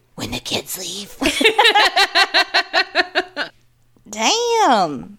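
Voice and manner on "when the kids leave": very soft, slow, creepy deadpan echo. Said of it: "in a deadpan voice says".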